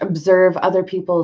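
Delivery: ordinary talk, nothing marked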